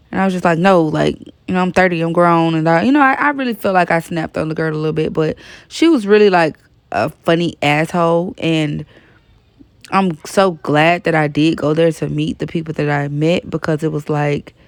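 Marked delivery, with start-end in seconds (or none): none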